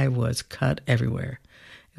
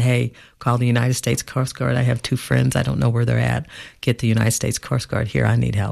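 plain

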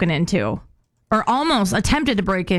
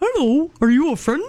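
high-pitched talking dog voice; 6 semitones higher than usual. Storyteller voices the dog greeting an intruder: [name]'s dog voice. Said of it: "I don't know why [name] talks like that".

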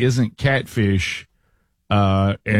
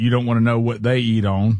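usual speaking voice

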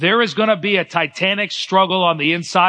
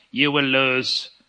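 put-on Russian accent, dropping to a low voice; 5 semitones lower, 3 dB quieter than usual. Recalling Ivan Drago in the ring with Rocky, do the Ivan Drago Russian voice. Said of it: "I liked his Russian voice".

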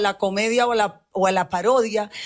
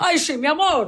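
high-pitched, mocking impression voice. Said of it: "yo no hablo así".

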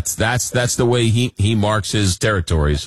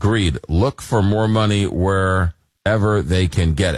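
normal talking voice

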